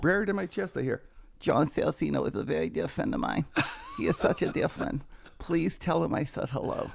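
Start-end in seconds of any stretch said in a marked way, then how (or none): 1.4-6.9 put-on emotional voice, pitched higher. Retelling being held in a hug, imitating emotional Mike Tyson. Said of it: "he starts in an emotional state".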